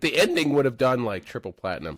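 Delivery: cracked, breaking voice. Talking about a movie ending while the voice cracks. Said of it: "My voice is cracked".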